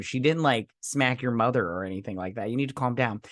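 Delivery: ordinary delivery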